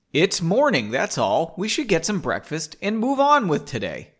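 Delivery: ordinary delivery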